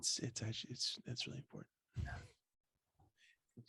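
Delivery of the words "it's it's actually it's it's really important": hushed, whispered, very soft radio-host voice. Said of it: "Turn into N P R real quick".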